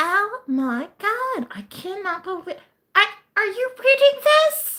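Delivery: mock frantic, very high, hyped-up mother voice. Retelling the speaker's mom calling about the news, imitating a hyper mom. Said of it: "She would like get all like hyper".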